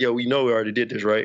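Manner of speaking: acted muttering under breath. Retelling own earlier remark: imitating own muttering under breath. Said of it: "I was saying it under my breath".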